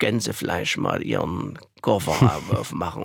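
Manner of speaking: put-on low, wide-ranging broad Saxon accent.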